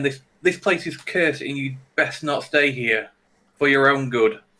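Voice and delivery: firm, pointed and forceful but still courteous. Saying a character's line again the way he would: aggressive but not rude. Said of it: "he'd say it in an aggressive way".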